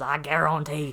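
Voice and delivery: put-on dropping low into Cajun accent. Explaining a cartoon alligator man's catchphrase, in Leatherhead's Cajun accent. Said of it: "he has a Cajun accent".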